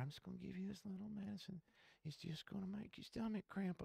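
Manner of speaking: very high, very quiet, nice and sweet whisper. Retelling a nurse whispering about the medicine: imitating a nurse whispering sweetly. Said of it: "real sweetly, nice, whispering in your ear".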